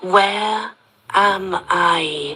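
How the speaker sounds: super slow, very deliberate, drawn-out speech. Dazed after being given drugs, asking where she is, speaking super slowly. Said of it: "I speak super slowly".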